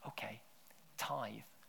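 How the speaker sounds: barely-there, very soft, intimate whisper. Retelling what god says to someone in chronic poverty: imitating god whispering. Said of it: "he's whispering".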